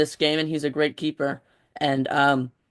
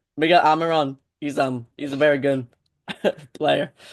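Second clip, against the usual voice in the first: giggling and laughing through the words. Naming a player to watch against Atlanta, laughing while talking. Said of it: "I don't know why I'm laughing".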